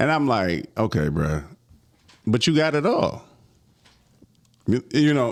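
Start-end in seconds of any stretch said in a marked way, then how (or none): 0.8-3.2 mock heavy sarcasm with swooping delivery. Retelling what is said to well-off associates: retelling own sarcastic remark. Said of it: "I'm being sarcastic when I say this".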